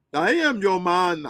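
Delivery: put-on poorly done Indian accent. Acting out a man demanding loyalty from his partner, in a bad indian accent. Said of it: "that was a bad Indian accent".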